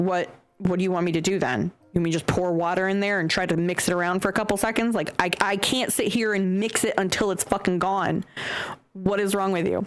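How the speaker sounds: ordinary delivery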